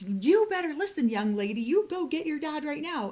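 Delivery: high-pitched scolding scream. Retelling how the caller answered on the phone: imitating someone screaming. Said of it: "she screams at me".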